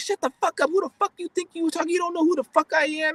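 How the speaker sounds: mock furious cussing, very high-pitched. Retelling how she cussed him out: imitating someone cussing angrily. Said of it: "the way she was cussing me out".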